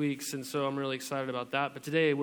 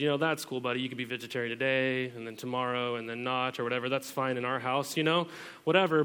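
ordinary delivery

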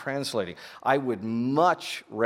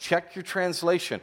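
ordinary delivery

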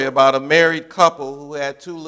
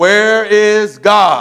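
even sterner, louder and pitched up; 6 semitones higher, 7 dB louder than usual. Narrating a story, the minister repeats his question to the silent boy: even sterner. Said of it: "this time even sterner than the other time".

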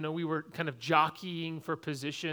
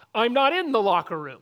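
very loud, high shouting; 6 semitones higher, 9 dB louder than usual. Retelling being wrongly told by a teacher to leave the locker room, retelling a yell back. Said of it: "And I'm yelling back".

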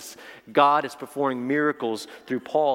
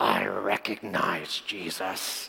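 low, hushed demon voice, like a possessing spirit; 6 semitones lower, 5 dB quieter than usual. Reading a Bible passage aloud, voicing the evil spirit: demon voice. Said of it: "I'm going to use a voice".

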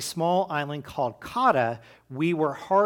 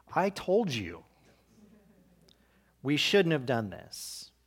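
mock knowing told-you-so voice, soft, rubbing it in; 5 dB quieter than usual. Retelling a man standing up to speak to the others, in an I-told-you-so voice. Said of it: "in an "I told you so" voice says".

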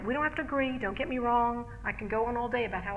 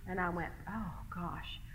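plain

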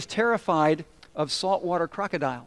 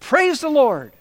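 put-on jubilant, overjoyed outburst, high and raised; 8 semitones higher, 7 dB louder than usual. Retelling how a woman praying on her front porch got excited: imitating excited praying. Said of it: "she would get so excited".

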